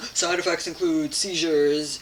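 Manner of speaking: auctioneer-style rattle.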